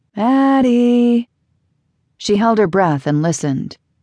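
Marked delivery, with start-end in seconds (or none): 0.2-1.3 eerie, distant, ghostly calling voice. Narrator voices a voice calling a woman's name: ghostly voice from far away. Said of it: "The ghostly voice from far away".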